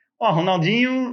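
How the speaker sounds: badly faked, put-on northeastern Brazilian accent. Retelling a prank call, imitating Rivaldo answering: bad northeastern Brazilian accent. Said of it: "falou com sotaque nordestino".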